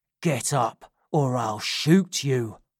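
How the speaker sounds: furious, raging whisper. Drawing a gun on the one kneeling before him, he speaks, whispering with rage. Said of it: "whispered Sykes, shaking with rage".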